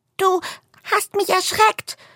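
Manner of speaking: very high, quivering, trembling frightened voice. Narrator reading the squirrel's line in a story, trembling voice. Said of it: "Seine Stimme zittert".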